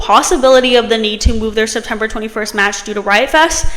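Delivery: ordinary delivery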